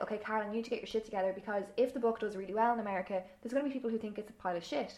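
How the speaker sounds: usual speaking voice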